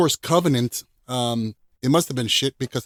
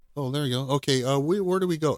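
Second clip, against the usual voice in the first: mock offhand, emotionless, unimpressed, nonchalant delivery; 4 dB quieter than usual. Imitating film scientists walking through an alien ship: imitating nonchalant tone. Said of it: "so nonchalant and so, like, non-excited".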